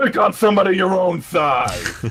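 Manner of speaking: yelling loudly in a put-on voice. Taunting an enemy in character during a game: yelling in character. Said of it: "and yell".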